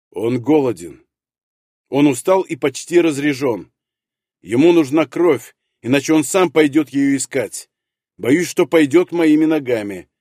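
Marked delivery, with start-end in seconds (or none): none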